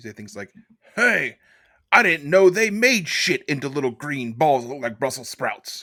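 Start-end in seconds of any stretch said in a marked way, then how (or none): 0.9-5.8 deliberate, slow, drawn-out drill sergeant voice. Joking about what gets said to Brussels sprouts: Full Metal Jacket drill sergeant voice. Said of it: "I'm just quoting Full Metal Jacket".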